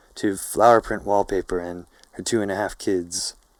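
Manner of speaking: ordinary delivery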